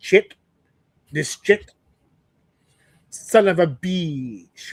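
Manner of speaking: put-on slow, rich Spanish accent. Describing a man who never lost his island accent, imitating how he talked: rich Spanish accent. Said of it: "like Spanish accent".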